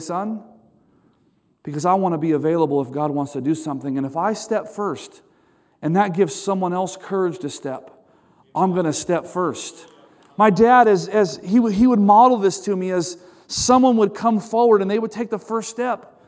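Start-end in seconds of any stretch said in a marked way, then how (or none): 0.0-9.8 mock tearful, heartfelt voice through tears. Retelling what a father said about answering an altar call: retelling a tearful reply. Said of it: "with tears in his eyes, he would say".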